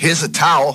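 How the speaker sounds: bright, eager, helpful tone. Rehearsing a line as directed, saying it in a really helpful tone. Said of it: "Say it like you're being really helpful".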